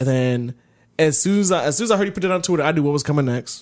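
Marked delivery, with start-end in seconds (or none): none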